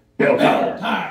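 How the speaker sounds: very loud, booming caveman bellow. Speaker quotes the guy at the end of a tire commercial, Belle Tire caveman voice. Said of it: "that guy that sounds like a caveman at the end who says".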